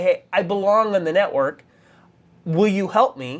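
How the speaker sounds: ordinary talk, nothing marked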